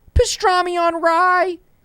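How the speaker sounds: very high, loud shouted yell. Recalling a favorite one-liner: retelling Shaggy's yell. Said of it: "He just yells the name of the sandwich".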